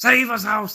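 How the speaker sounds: high, loud hollering like a wrestling announcer. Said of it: "He starts hollering".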